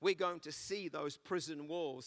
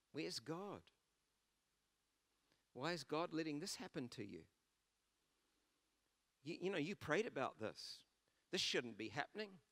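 put-on tempting whisper, quieter; 5 dB quieter than usual. Acting out Satan whispering doubts in someone's ear: Satan whispering. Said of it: "he'll come and whisper in your ear".

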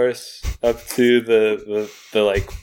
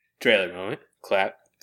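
ordinary talk

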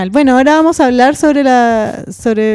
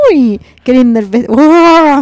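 put-on slow, drawn-out, gushing elderly woman voice; 4 dB louder than usual. Imitating a reporter the speakers both remember: old lady voice. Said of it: "esa que habla con voz de vieja".

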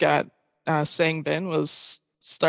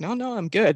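put-on panting, out-of-breath voice, higher; 4 semitones higher than usual. Retelling how a player on the ground answered trainers: imitating Bongi panting. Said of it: "he's panting".

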